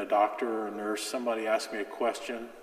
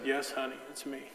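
plain

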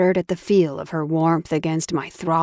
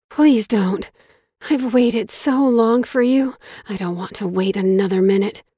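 breathy, rushed, airy voice, higher pitch; 5 semitones higher than usual. Narrator reading a novel, a woman begs the narrator not to leave, breathy and rushed. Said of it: "Her voice was breathy and rushed".

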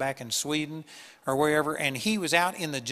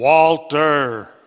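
very loud, thundering, booming call; 13 dB louder than usual. Retelling a man's story of a voice calling his name; retelling a booming voice. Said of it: "this booming voice said".

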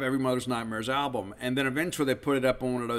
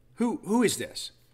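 haughty, lofty, scornful, pitched-up derisive tone; 8 semitones higher than usual. Retelling walking up and questioning her, in a haughty tone of derision. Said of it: "with that same haughty tone of derision".

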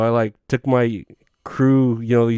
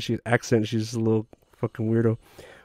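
ordinary talk

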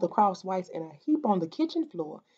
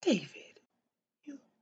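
faint, barely there, very hushed whisper; 11 dB quieter than usual. Sarah, holding her children close, sees David Giltner in the kitchen, whispering. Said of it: "she whispered".

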